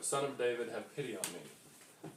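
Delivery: normal talking voice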